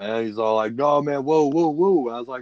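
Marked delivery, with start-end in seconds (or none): 0.7-2.1 freaked-out, alarmed, high, panicked cries. Retelling how a passenger in the speeding truck reacted: imitating someone freaking out. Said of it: "he starts freaking out".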